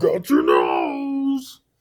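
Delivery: loud, high, belted, swooping villain voice. Recalling how a scary horror villain talked: Freddy Krueger voice. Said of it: "He was like".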